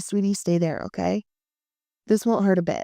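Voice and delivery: ordinary talk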